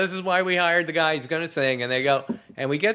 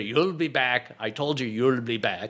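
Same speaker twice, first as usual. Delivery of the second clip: put-on Scottish accent; 4 semitones lower than usual. Retelling how a voice actor first voiced a character, Groundskeeper Willie Scottish accent. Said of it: "I'll do him Scottish".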